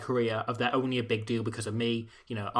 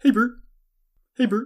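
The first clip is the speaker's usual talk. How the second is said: very high, very loud puppet voice; 11 semitones higher, 7 dB louder than usual. Asked on the podcast to give them some Ernie, the speaker does an Ernie voice. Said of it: "give us some Ernie".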